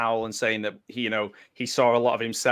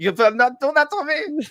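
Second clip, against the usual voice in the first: mock German accent, higher and louder; 6 dB louder than usual. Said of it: "dropped his British accent and became German".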